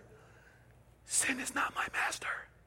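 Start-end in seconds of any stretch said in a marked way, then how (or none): 1.0-2.3 soft, whispered voice. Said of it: "why not whisper".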